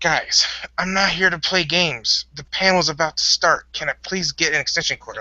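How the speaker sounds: angry voice. Retelling what was said when refused an extension cord: imitating own angry words. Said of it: "that was why I really got pissed".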